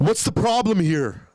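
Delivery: put-on high, aggressive, confrontational, own-the-place tone. Retelling walking into a polling station: imitating own aggressive tone. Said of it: "and I went so aggressive".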